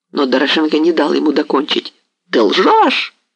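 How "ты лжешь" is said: abrupt, high, sudden cried-out exclamation. Narrating the hetman Doroshenko cutting off the pale, trembling man: cried out. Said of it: "вскрикнул он".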